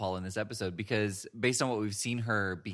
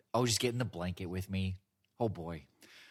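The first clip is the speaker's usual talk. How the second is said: creepy put-on voice; 2 semitones lower, 4 dB quieter than usual. Retelling a scene, imitating Archer: creepy Archer impression. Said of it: "that makes it sound a lot creepier".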